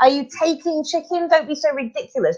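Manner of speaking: acted-out shout. Retelling a reaction to a tv report: imitating shouting at the tv. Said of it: "I'm shouting at the T V screen".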